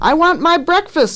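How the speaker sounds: very high, shrill, demanding shout. Narrator reads Carrie in her high chair calling to Ma, shouting. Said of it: "Carrie shouted".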